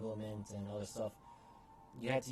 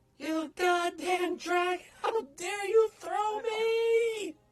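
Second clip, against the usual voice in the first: very high-pitched voice, louder and slower; 9 dB louder than usual. A game master voicing a voice heard by players with high perception, very high-pitched. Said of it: "in a very high-pitched voice".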